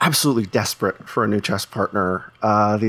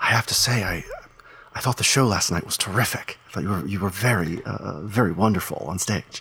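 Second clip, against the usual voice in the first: calm whisper, quieter; 4 dB quieter than usual. Voicing a character leaning in during a calm moment: whispering calmly. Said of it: "sort of whispers a little more calmly".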